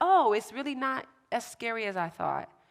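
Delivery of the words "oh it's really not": usual speaking voice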